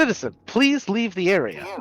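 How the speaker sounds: whirring mechanical machine voice, high and swooping. Voicing a whirring machine that warns a player character to leave: voicing a whirring machine. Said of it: "it comes whirring up to Amity".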